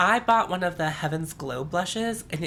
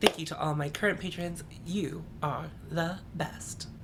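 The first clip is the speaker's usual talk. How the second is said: soft, flat, machine-like robotic monotone; 6 dB quieter than usual. Thanking patrons at the end of a video, robotic monotone. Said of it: "Now I'm sounding like a robot".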